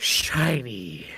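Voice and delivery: very low, drawn-out mumble under the breath. Voicing a character who examines a gift, muttering under his breath. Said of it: "You can hear him mutter".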